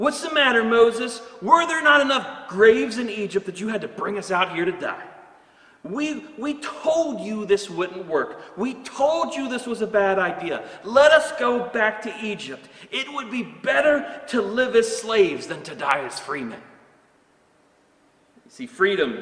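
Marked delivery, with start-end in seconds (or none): 0.0-16.6 furious, high screaming, crowd-like. Retelling how the Israelites spoke to Moses: imitating people screaming. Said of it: "They started screaming at Moses".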